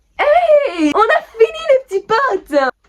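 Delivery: high, loud, excited victory cheer.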